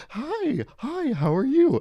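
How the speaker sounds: put-on cooing, swooping baby talk, very high and slow. Speaker imitates how people talk to a baby, in a mock baby-talk voice. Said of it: "the baby voice thing".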